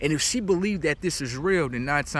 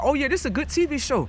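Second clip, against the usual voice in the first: mock high, smooth, offhand, slick, breezy voice; 12 semitones higher, 3 dB louder than usual. Acting out what she'd say to someone, in a put-on slick delivery. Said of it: "I say it in so slick a way, like, oh, this, I say it just like this".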